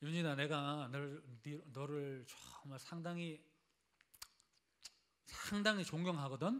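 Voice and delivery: quiet, low, offhand, careless and dismissive tone.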